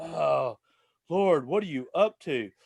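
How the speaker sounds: slow, mopey, put-upon whine. Retelling how a man moped in the tow truck's front seat, imitating a mopey whining prayer. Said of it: "he was just kind of moping".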